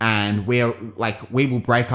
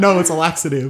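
mock blurted-out loud shout; 7 semitones higher, 4 dB louder than usual. Telling a story about a man in a crowd, retelling his shout. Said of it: "So he shouts out".

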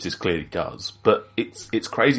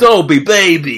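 very loud, put-on sleazy American accent; 9 semitones higher, 10 dB louder than usual. Acting out people calling him back for another film: dirtbag American accent. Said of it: "It was a dirtbag American accent".

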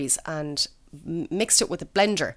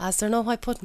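put-out, complaining man's voice; 3 semitones higher, 3 dB quieter than usual. Sitting down to a fry-up the speaker cooked him, impression of how he talks. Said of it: "we sit down and go".

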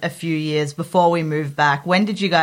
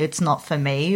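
ordinary talk, nothing marked

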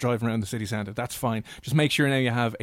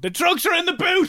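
shouting, higher and louder; 4 dB louder than usual. Retelling calling through the car speaker during a stop: imitating own shout. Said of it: "I just start shouting".

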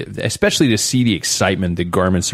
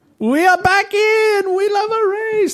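horrible put-on French accent, very high. Discussing the tour, one speaker attempts a line in a horrible French accent. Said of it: "That was a horrible accent".

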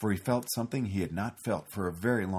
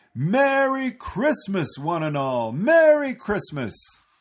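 loud, clear, very high ringing call; 11 semitones higher, 8 dB louder than usual. Narrator reads Santa calling out from his flying sleigh, loud and clear. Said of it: "Santa's voice rang loud and clear".

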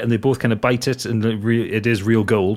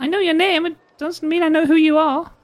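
put-on very high-pitched small little girl voice. Voicing a little girl answering a stranger: voicing a little girl. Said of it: "the little girl says".

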